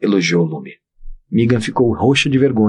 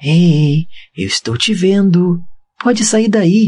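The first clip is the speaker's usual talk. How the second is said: put-on childlike voice, high-pitched, very slow and drawn out; 9 semitones higher than usual. Lume calls to a small figure hiding behind a mining cart, childlike tone. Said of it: "num tom infantil".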